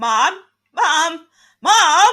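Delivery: screaming. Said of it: "she's just screaming".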